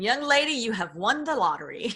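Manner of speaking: put-on French accent on English words. Retelling what he told her after she survived, imitating a French accent. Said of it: "had a French accent".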